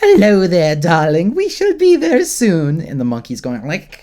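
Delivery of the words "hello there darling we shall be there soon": very loud, swooping, doting grandma voice. Describing a character pretending to be a grandma with a baby; Crimson Lotus's grandma voice. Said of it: "pretending to be a grandma with a little baby".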